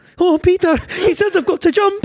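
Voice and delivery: put-on elderly Scottish woman's voice. Quoting a player heard over a headset in a Titanic game, old Scottish lady voice. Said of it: "old Scottish lady being like".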